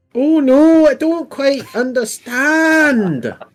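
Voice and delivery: very high, shrill, drawn-out, irritating elf voice. Voicing a scarred female elf used to fighting: high-pitched irritating elf voice. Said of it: "High-pitched and irritating".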